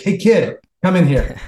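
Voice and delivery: mock friendly calling out, kind tone. Retelling how a comedy writer called him into his office each day; retelling a friendly yell. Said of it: "he would yell at me in a nice way".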